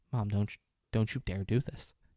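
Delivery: ordinary delivery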